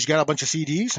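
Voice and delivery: ordinary talk, nothing marked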